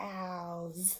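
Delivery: very soft, slow, long drawn-out "cows". Teaching the Stretchy Snake hand signal, the speaker says the word stretched out slowly. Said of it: "you stretch it out slow".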